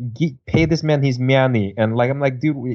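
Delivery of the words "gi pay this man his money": deliberately awful, put-on Russian accent. Quoting a line from a movie about poker: John Malkovich's bad Russian accent. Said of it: "one of the worst Russian accents I've ever heard".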